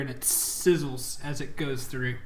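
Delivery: ordinary talk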